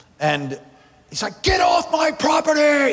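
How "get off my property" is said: imitated man yelling. Retelling witnessing door to door, a man at the door: imitating a man yelling. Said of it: "is yelling at me".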